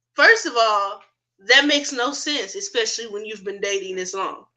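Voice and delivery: ordinary talk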